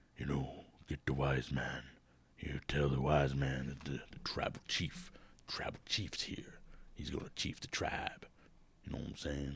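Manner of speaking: understated, hushed, quiet and subdued speech. Imitating Roman Reigns, who talks quiet: quiet Roman Reigns impression. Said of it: "Roman Reigns apparently has a southern accent a little bit. Or no, he, 'cause he talks quiet".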